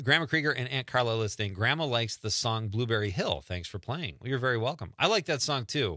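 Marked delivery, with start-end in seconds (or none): none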